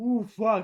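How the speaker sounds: sputtering, choked, coughing delivery. Reacting to a haunted hotel video, choking while talking. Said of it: "I don't know why I'm choking".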